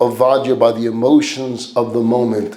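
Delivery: ordinary delivery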